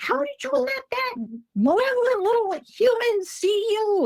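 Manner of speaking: mock very high, shrill, angry scolding. Retelling a voice calling from further back in the woods, imitating an angry mom. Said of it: "like any, you know, angry mom would".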